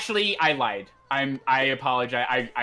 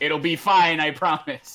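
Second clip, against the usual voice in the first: imitated screaming, higher pitch; 3 semitones higher, 4 dB louder than usual. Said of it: "literally screaming at you".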